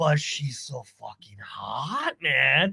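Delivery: put-on drunk speech. Retelling own remark made to annoy someone: imitating own drunk speech. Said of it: "but I said it like I was drunk".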